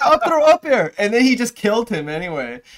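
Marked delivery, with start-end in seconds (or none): 0.0-0.9 very high-pitched, loud, eager voice. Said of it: "I was like".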